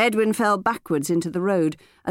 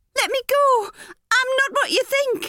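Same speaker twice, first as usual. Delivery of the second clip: put-on very high, terrified girl's cry, pleading. Audiobook narrator reads the girl's line as a man holds her: terrified voice. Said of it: "The girl's terrified voice".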